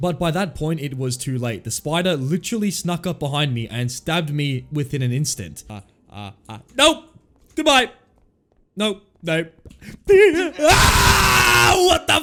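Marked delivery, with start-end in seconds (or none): 5.7-12.2 terrified, panicked delivery. Reacting as a huge spider attacks in a game: terrified. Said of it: "you can hear the expression in my voice".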